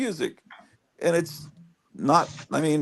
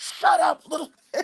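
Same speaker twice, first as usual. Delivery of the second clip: put-on, very high shrieking scream; 12 semitones higher than usual. Retelling a neighbor's recorded fights through the wall: imitating someone screaming. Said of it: "all night screaming".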